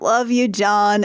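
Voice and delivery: sleepy, half-awake mumble. Retelling a movie scene where a character speaks in her sleep: imitating a sleepy mumble. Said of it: "sleepily mumbles".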